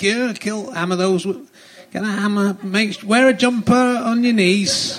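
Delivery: high-pitched, halting, self-interrupting, words cut off. Imitating the Yorkshire Ripper after saying he'll do it: Peter Sutcliffe impression. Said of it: "I'll do it".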